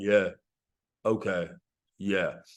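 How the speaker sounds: deep, robotic, very low flat monotone drone. Retelling a house seller's replies: imitating a monotone robot voice. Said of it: "he's monotone, sound like a robot".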